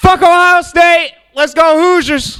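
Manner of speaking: hyped, high-pitched yell like an excited fan.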